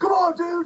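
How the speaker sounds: frantic, high-pitched loud scream. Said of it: "just screaming at me like".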